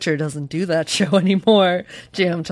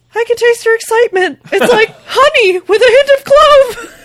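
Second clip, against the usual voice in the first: loud, very high, full falsetto; 7 dB louder than usual. Reading a novel, a man tells a woman something, in a falsetto voice. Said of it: "He told her in a falsetto voice".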